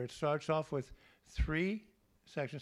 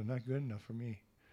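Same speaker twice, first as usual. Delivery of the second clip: mock muttering under breath, lower pitch; 3 semitones lower, 3 dB quieter than usual. Recounting a reply to the teacher: retelling muttering under breath. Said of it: "under my breath".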